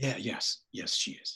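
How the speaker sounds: very soft, hushed, barely voiced whisper. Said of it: "You're whispering".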